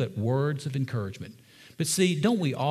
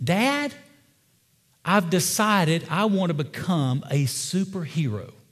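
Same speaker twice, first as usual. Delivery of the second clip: put-on slow, grand, announcing little boy voice; 4 semitones higher than usual. Retelling a young boy overheard telling his dad, imitating a boy's very loud voice. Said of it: "in this very loud voice say".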